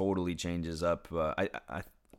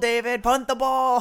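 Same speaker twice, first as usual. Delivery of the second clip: put-on scream, higher and louder; 11 dB louder than usual. Retelling yelling from the stands at a coach: imitating own screaming. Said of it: "start screaming".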